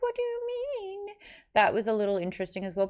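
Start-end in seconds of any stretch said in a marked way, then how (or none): 0.0-1.1 very high-pitched, whiny voice. Imitating a grown man voicing a ten-year-old girl: imitating Chiri's whiny voice. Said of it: "the whiny voice".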